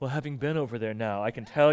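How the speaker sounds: playfully pious delivery. Speaker shows the phrase his staff tease him for repeating; mock-pious, joking tone. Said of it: "I keep on saying sort of piously, jokingly".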